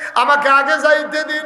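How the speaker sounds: impassioned, high, loud pleading shout.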